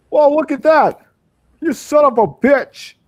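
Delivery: put-on very high, very loud, old-movie-style star voice. Wanting to do Jimmy Stewart while playing a fish, speak in a Jimmy Stewart voice. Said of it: "I just want to do Jimmy Stewart".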